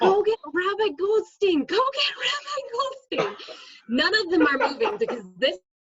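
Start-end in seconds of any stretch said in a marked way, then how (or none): 0.0-3.4 mock urgent high yell, "Rabbi" drawn out. Retelling a classroom fire, calling to the boys: imitating own yelling. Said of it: "So I'm yelling at the boys".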